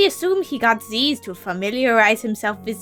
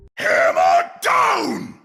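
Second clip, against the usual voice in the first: put-on booming knight voice; 4 semitones higher, 4 dB louder than usual. Reading an in-game book aloud: Reinhardt voice. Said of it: "the voice of Reinhardt from Overwatch".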